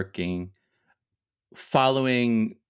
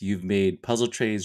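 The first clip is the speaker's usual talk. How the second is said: ordinary talk, nothing marked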